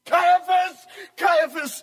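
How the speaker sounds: shouting. Bursting in and calling for caiaphas, shouting. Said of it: "there is no need to shout".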